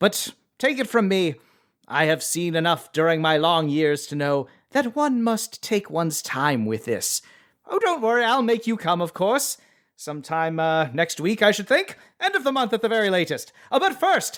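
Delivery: cartoon skeleton villain voice. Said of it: "I was slipping into my Skeletor voice".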